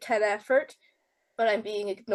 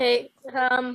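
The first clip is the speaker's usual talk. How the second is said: scratchy voice, words pushed through a rough throat. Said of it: "my voice is scratchy from covid".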